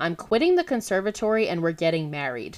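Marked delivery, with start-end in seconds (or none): none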